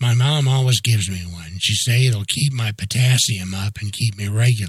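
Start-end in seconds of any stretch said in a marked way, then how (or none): none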